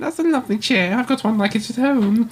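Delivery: put-on posh, high-pitched voice with an admiring tone.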